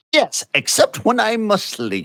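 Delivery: terrible put-on British accent. Voicing a character in a role-play scene, in a terrible British accent. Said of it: "I do a terrible British accent".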